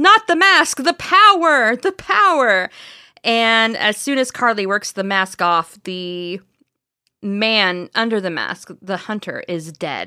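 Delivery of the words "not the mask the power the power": mock screaming, very high-pitched, shrill and loud. Retelling a story where a head screams as its mask is pried off: imitating a screaming head. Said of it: "the head is just screaming".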